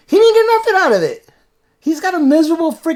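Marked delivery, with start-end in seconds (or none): 1.8-2.9 voice breaking and cracking mid-line. A dad talking with his kid about George Bush's life: voice cracking. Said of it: "voice just cracked".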